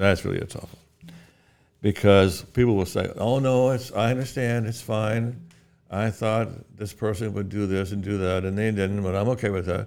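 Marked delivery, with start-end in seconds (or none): none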